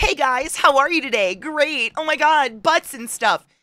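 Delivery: very high, loud, up-in-the-register voice. Imitating how the voice sounded when first starting to stream: imitating own high-pitched past voice. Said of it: "Everything I say is up in this register".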